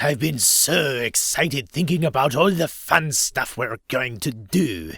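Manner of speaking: cross, scolding, fatherly voice with French accent. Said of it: "Fatherly, angry-sounding, and French".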